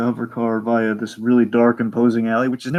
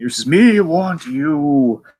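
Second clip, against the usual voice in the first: very slow, mumbled monster voice, you dragged out; 4 semitones higher, 4 dB louder than usual. Retelling the story, the speaker voices Frankenstein talking like a monster. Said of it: "he's talking like a monster".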